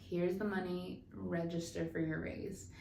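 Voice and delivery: ordinary talk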